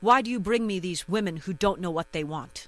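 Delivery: play-acted rude, dismissive voice, fast. Retelling what a man said to the facilitator, imitating a rude voice. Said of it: "in a very, I would say, rude voice said".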